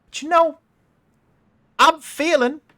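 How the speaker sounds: shouting gunwoman voice. Voicing Harper, who shouts out to a player before a gunfight: Harper shouting at a player. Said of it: "She shouts out to you".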